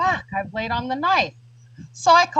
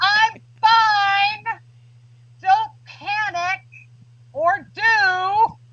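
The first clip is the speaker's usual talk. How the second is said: shrill, very high, very slow, stretched scream; 9 semitones higher than usual. Retelling calling to her son after the stabbing: imitating her own screaming. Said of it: "I'm screaming".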